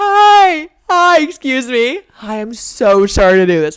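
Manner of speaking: very loud, very slow, over-polite, apologetic tone. Retelling approaching a neighbor for help: imitating own apologetic tone. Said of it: "Literally talking like that".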